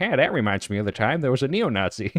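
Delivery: dopey, cartoon dad style voice. Streamer rereading a chat message the way they wanted to; Peter Griffin voice. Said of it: "I wanted to read that in like the Peter Griffin voice".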